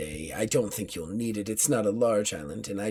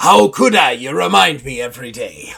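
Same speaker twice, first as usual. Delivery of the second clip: put-on pirate voice, higher and louder; 5 semitones higher, 14 dB louder than usual. Voicing a pirate crew member reluctant to fight: put-on pirate voice.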